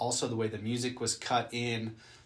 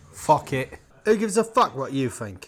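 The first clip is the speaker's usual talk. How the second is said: very loud, booming British gangster accent; 4 semitones higher, 9 dB louder than usual. Told the British accent is his new favorite, showing off a British gangster accent. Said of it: "I'm pretty good at it".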